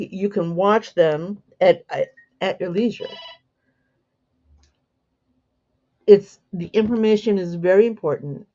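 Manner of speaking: stuttering, stammering with excitement. A host promoting a teacher's weekly presentations, stuttering from excitement. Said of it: "I'm starting to stutter".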